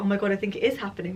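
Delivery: put-on excited voice. Retelling her first reaction to the news: imitating her own excitement. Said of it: "first so excited".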